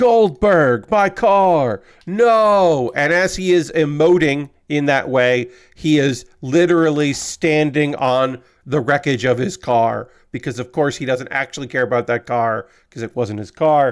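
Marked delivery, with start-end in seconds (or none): 0.0-2.9 high, loud yelling. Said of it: "he just starts yelling".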